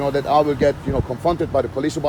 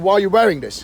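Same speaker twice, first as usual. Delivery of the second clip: ordinary talk, nothing marked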